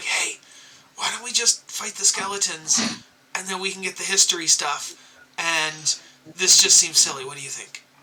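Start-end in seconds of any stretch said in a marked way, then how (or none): 0.0-4.9 whisper, quieter. Speaking in character to the party about fighting skeletons: whispering to the party. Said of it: "I whispered to the party".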